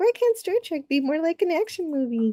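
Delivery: put-on high, sing-song childlike kid voice. Reading out what someone thought as a kid: put-on kid voice. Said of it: "I was using kid voice".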